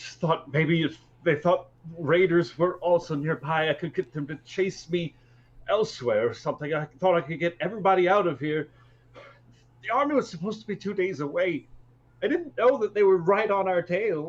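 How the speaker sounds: trembling, shaky, cracking, broken, very high-pitched voice. A game master voicing a kid answering the captain, in a shakily broken voice. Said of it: "he says in this shakily broken voice".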